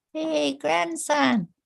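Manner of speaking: very high, small voice with rough crackly edge. Telling a story, voicing an elder calling to her grandson: little voice. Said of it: "hear a little voice".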